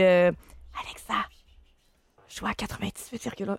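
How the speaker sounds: imitated whispering. Retelling how a host who lost his voice spoke to a smart speaker, retelling a whisper. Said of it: "il chuchotait auprès d'Alexa".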